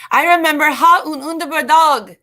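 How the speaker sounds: clumsy amateur Swedish accent. Hosting a live stream for viewers: very bad Swedish accent. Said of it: "I'm speaking in a very bad accent".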